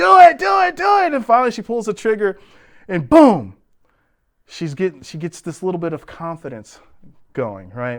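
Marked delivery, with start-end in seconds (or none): 0.0-1.1 very high, loud, hoarse yelling. Retelling coaching a scared shooter right by her ear, retelling a yell. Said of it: "and I'm yelling".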